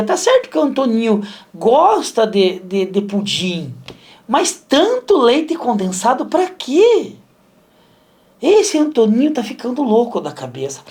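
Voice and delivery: put-on thick, heavy German accent. You retell what your mother said about Antoninho, imitating your mother's strong German accent. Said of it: "Minha mãe tinha um sotaque alemão muito puxado".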